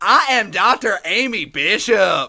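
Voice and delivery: high, loud, yelled pro-wrestler-style voice. Act out a woman announcing herself after a sucker punch, imitating Amy Bishop yelling. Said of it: "She did all this while yelling".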